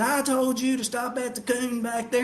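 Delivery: acted-out, irate man's hollering, mild angry yell. Retelling a story from a truck drive, imitating a man screaming at him. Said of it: "he's screaming at me".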